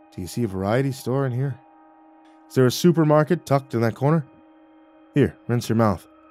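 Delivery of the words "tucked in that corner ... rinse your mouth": ordinary delivery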